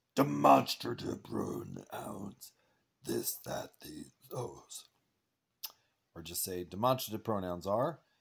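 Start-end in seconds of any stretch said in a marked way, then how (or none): 0.2-4.9 loud, creaky, rough, put-on monster voice. Teaching an english lesson, saying the demonstrative pronouns in a monster voice. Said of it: "We'll just make a monster voice".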